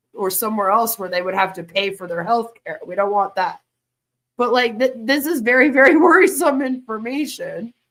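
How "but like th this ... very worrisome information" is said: speaking through laughter mid-sentence. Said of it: "I'm laughing because it's a little ridiculous".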